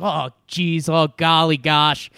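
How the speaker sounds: loud, drawn-out mocking voice. Retelling a radio host's impression: Andrew Luck impression. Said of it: "does an impression of Andrew Luck".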